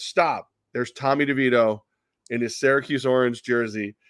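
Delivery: ordinary talk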